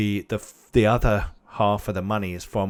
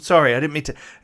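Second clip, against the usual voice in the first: nervous and embarrassed, higher and louder; 7 semitones higher, 6 dB louder than usual. Voicing a character who apologizes to a doctor: flustered. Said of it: "you can see he's getting a bit flustered".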